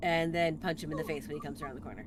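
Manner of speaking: ordinary delivery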